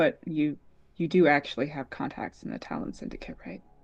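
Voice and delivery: secretive, leaned-in whisper. Freya leans in so others nearby won't hear, whispering. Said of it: "lean in and whisper and go".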